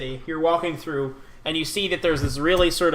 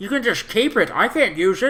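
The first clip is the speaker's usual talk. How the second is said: put-on old man voice, higher pitch; 5 semitones higher, 3 dB louder than usual. Voicing a short, old, wrinkly man sitting by a vehicle: old man NPC voice. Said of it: "His voice just changed really quick".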